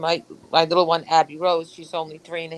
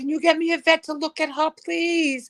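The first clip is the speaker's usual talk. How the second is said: put-on very high screaming, sobbing, crying voice; 12 semitones higher than usual. Retelling begging for a vet for the injured animal, retelling screaming and crying. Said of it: "I'm screaming and crying".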